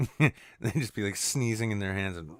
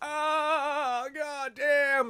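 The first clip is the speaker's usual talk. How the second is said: acted very high pained scream with a stretched "ah". Joking about how players fake injuries after a graze, imitating a player screaming. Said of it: "screaming, like".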